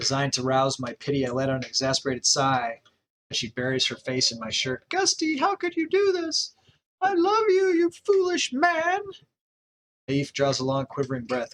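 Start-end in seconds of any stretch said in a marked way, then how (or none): 4.9-9.0 loud, high-pitched squeaking voice. Narrator voicing a wife pleading with her husband, in a Minnie Mouse voice. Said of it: "She sounds like Minnie Mouse".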